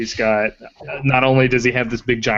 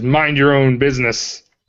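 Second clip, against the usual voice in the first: snarling half-orc growl; 3 semitones higher, 4 dB louder than usual. Voicing a half-orc thief after the door is kicked in: growling snarl. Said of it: "he growls out uh, with a snarl".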